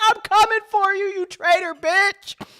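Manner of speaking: very high, stretched, drawn-out screaming yell. Narrating a character on a spider running off: screaming. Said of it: "he's screaming".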